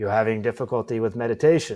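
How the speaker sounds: voice dropped way down. Retelling how he opened his eyes and asked you a question, Dalai Lama's very deep voice. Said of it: "he's got this very deep voice".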